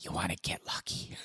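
put-on whisper. Acting out Ocean Ramsey calling a shark over: Ocean Ramsey whispering. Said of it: "What is she whispering?".

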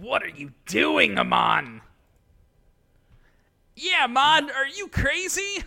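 wild, very high, swooping put-on demon voice. Speaker acting out a demon's lines while describing a scene; demon voice. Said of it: "This voice of this demon".

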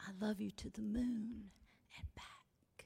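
gentle put-on whisper. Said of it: "a whispered, gentle sound".

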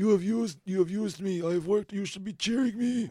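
put-on hoarse smoky voice. Retelling a wrestler's promo with a strained voice: imitating Jinder Mahal's hoarse voice. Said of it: "like he breathed in a lot of smoke".

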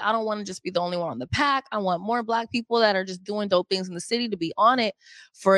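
plain

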